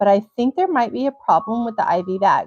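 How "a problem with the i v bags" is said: ordinary talk, nothing marked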